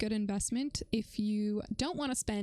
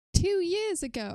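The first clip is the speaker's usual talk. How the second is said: sudden put-on British accent, raised and high; 9 semitones higher, 7 dB louder than usual. Chatting with a guest, the speaker slips into a british accent. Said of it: "I just took on a British accent".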